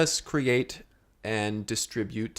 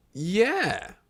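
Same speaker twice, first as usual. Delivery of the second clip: high, excited, happy chirp. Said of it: "Don't say it like that. You sound, uh, excited".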